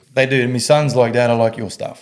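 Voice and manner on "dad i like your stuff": plain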